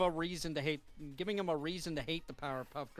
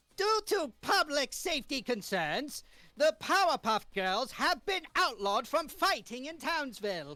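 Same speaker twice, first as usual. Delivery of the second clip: very high-pitched cartoon-style voice; 10 semitones higher, 4 dB louder than usual. Reading the mayor's press conference line, as asked: Mayor voice from the Powerpuff Girls cartoon. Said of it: "try to make him sound like the, from the actual cartoon".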